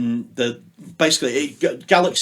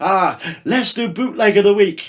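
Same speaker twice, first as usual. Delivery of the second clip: clumsy, bad, put-on French accent, pitched up; 8 semitones higher, 4 dB louder than usual. Retelling what a french program director said: bad french impression. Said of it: "bad French impression here".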